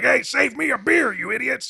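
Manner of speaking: very high, rough cartoon-style yell. Retelling a cartoon scene where the father yells back, imitating Yosemite Sam yelling. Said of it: "yells back at them kind of in his Yosemite Sam sort of".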